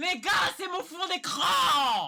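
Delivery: high, slow, loud, excited yelling.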